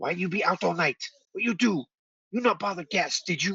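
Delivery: put-on old kobold voice. Voicing an older kobold scolding a younger one: older kobold voice. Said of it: "from a much older kobold say".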